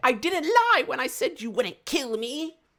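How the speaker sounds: squeaky, very high, loud, shouted gnome voice. Player voicing a gnome who speaks before running away, in a very gnomish voice. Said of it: "in in a very gnomish voice".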